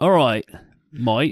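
put-on, mock Australian accent. Co-hosts trying out accents: put-on Australian accent. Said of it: "You gotta say might".

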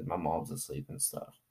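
soft, hushed, low quiet talk.

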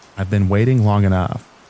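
usual speaking voice

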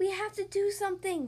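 whispering. Narrating a children's story, voice one character whispering to another: whispering. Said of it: "Lammy whispers to Doc".

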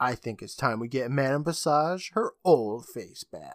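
plain

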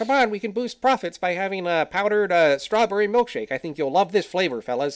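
high-pitched, nasal, needling voice. Reviewing a film, speaker acts out the businessman phoning the brothers: nasally Ray Kroc impression. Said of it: "portrays Roy Kroc as having a nasally sort of voice".

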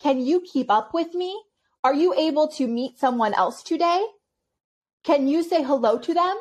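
acted, high, patronizing voice, as if talking to a child. Retelling how an interviewer kept speaking to her: mimicking interviewer talking down. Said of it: "talked like this to me".

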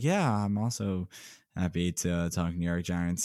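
very low, quiet, hushed, flat, unenthused drone. Balancing the co-host's excitement about Giants free agency, going low. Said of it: "let me just go low and be like".

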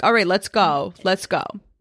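put-on rushed, hurried urgent tone. Retelling getting in the car late: imitating own rushed urging. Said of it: "now I'm in a rush".

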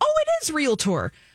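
ordinary talk

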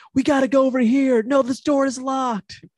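very high, shouted calling. Retelling a movie scene with characters in the background: imitating characters yelling. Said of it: "yelling in the background".

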